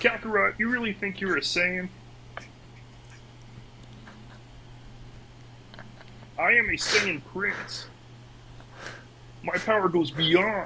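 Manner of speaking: froggy cartoon-puppet voice. Podcast host doing Vegeta lines for co-hosts in a Kermit voice. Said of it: "Vegeta lines in Kermit voice".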